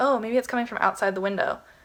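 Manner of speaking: ordinary talk, nothing marked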